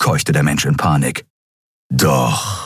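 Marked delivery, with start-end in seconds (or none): 1.9-2.7 growled, much lower. A fighter answers a panicked human's protest: growled. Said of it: "knurrte Keru".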